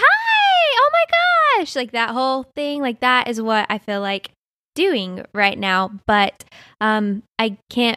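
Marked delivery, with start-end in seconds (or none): 0.0-1.7 very high, slow, stretched-out hi. Describing seeing a close friend again after a long time; voice jumping way up. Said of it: "your voice goes up like three pitches".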